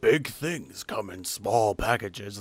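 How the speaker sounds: put-on deep announcer voice. Recalling a promo tagline, doing a Peter Cullen impression. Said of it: "That's my Peter Cullen impression".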